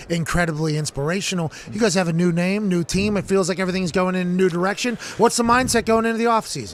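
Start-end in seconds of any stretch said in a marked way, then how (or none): none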